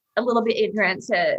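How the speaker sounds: plain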